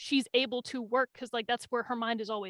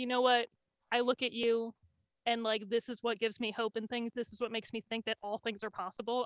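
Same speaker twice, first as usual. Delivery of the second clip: normal talking voice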